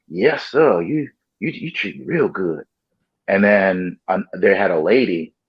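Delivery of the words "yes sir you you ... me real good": meek, passive voice, pitched up. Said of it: "he was really passive".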